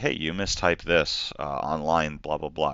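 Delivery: ordinary talk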